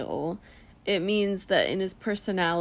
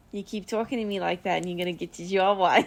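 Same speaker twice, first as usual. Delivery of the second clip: put-on old mobster voice. Repeating a Real Housewives line the other speaker quoted: old mobster voice. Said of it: "[name] turns into this, like, old mobster".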